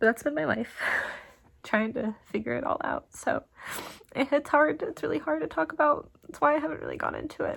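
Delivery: talking through tears, high and tearful. Talking about something really hard to talk about, crying. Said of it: "sorry, I don't want to keep crying".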